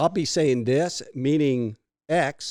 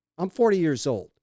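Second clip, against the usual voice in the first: ordinary delivery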